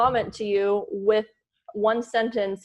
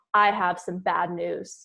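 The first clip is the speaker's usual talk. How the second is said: put-on, slow tone of delivering bad news; 3 semitones lower than usual. Retelling an early-morning phone call, imitating Joe's bad-news tone. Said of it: "In that tone".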